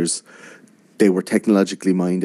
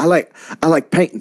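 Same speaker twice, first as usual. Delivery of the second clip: put-on Texan politician voice, higher pitch; 9 semitones higher than usual. Retelling a talk show appearance, doing a George W. Bush impression. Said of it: "he's doing, like, laughing, telling jokes".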